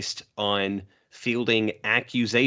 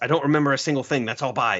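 high, mock fed-up, frustrated shout; 5 semitones higher than usual. Retelling a scene where Bakugo answers the media: imitating Bakugo shouting. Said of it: "he just shouts".

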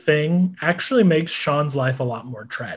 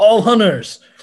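loud, higher-pitched yell. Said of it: "literally just yell".

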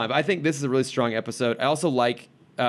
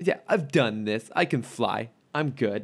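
put-on cocky voice. Imitating Terry, who another speaker says is cocky: cocky Terry impression. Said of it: "I don't know why he sounds like this".

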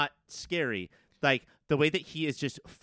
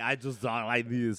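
put-on Austrian-style robot accent, lower pitch; 3 semitones lower than usual. Imitating how Arnold talks as the robot: Arnold Schwarzenegger impression. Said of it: "That man had this accent for some reason".

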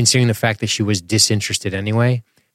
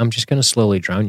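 ordinary delivery

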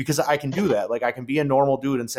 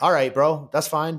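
usual speaking voice

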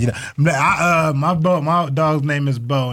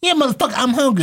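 put-on dog voice, much higher; 10 semitones higher than usual. Comedian acts out what the pet would say when asked if it is hungry, doing the dog's voice, a put-on dog voice. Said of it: "I give my dog a voice".

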